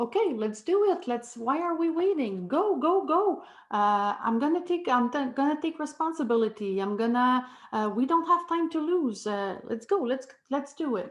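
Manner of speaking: fast, blunt, punchy speech with no hesitation. Showing how a proactive person talks: imitating fast, direct speech. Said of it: "they speak fast, direct language".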